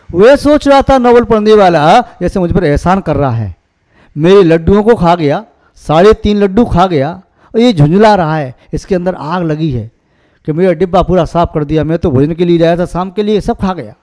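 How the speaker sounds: normal talking voice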